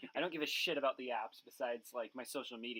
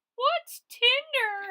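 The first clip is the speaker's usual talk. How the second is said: shrill voice, very high and very loud; 14 dB louder than usual. Acting out your dad answering your mom's screaming about a dating app, imitating dad in a higher voice. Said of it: "every time you do an impression of your dad, the voice gets higher".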